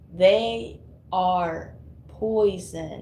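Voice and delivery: slow, deliberate, each word spaced and weighed. Repeating a phrase to the audience, this time said a bit slower. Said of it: "Let me say that a bit slower".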